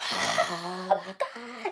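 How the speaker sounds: over-the-top swooping pain groan. Retelling a man overreacting while medics check his arm: imitating an overdramatic groan. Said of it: "just doing the most".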